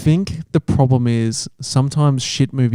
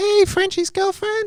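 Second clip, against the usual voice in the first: very high-pitched voice; 3 dB quieter than usual. Impersonating his girlfriend in a chat about boyfriends, imitating his girlfriend's voice. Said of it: "My girlfriend's got quite a high-pitched voice".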